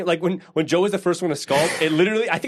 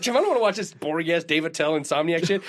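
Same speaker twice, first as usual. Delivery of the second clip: normal talking voice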